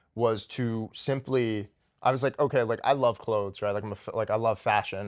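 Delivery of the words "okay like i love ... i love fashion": usual speaking voice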